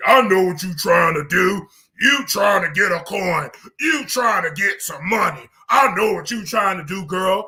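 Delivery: aggressive, very deep voice. Retelling a confrontation, the speaker quotes TS Madison in a mock-aggressive deep voice. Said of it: "her aggressive, deep voice, very deep voice".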